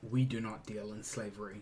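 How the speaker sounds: absolutely, utterly disgusted tone. Player answering in character about slavers: absolute disgust. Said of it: "a tone of like absolute disgust".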